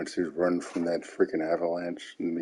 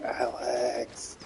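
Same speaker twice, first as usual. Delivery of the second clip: high mock scream, shrieked and pitched high. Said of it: "she was screaming".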